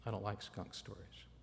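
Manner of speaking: said kind of softly and quietly.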